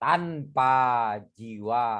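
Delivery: tanpa jiwa drawn out long, very low pitch. Demonstrating delivery of a line, with drawn-out, low-pitched tanpa jiwa. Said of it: "Dipanjangkan tapi direndahkan".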